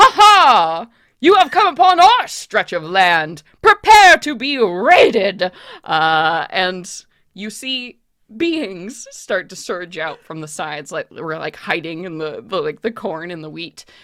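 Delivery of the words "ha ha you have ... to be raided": very loud, booming, high, ringing shout. Narrating a road scene, a raider calls out to travelers: voice ringing out. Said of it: "a voice that rings out over you".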